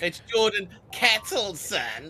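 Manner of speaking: real snarky, high, slow drawl.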